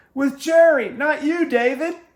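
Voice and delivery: shrill, very loud, high-pitched holler. Retelling yelling at announcers in a golf cart about a picture: retelling own yell. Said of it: "And I yelled".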